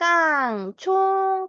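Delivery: 깡총 said light, high, slow and bright.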